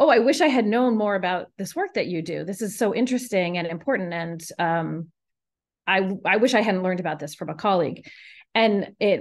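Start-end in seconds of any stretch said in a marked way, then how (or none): none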